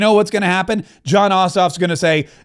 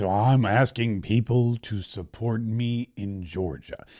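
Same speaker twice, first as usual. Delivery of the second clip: sluggish, halting, very low, slow, soft drawl; 8 semitones lower, 9 dB quieter than usual. Imitating a Georgia candidate asking for support, mocking his slow way of talking. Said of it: "Why does he talk like that?".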